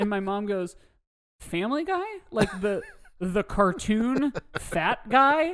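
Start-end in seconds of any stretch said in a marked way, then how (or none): 1.4-5.5 put-on, slow, drawn-out, heavily sassy delivery. Retelling what mom said to the nurse: imitating mom's sassy tone. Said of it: "leans into the, like, sass of it".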